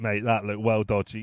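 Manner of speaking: ordinary talk, nothing marked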